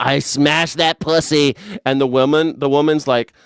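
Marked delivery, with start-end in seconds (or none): 0.0-1.5 cocky, bragging, self-satisfied tone. Acting out a crude brag as a bragging guy: imitating Donald Trump bragging. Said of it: "Donald Trump's like that guy who's like".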